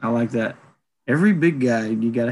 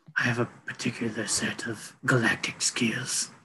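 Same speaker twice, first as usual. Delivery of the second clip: growled, breathy whisper; 8 dB quieter than usual. Imagining a casting pick voicing the villain: growly Liam Neeson voice. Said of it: "Give him, like, a growly type voice".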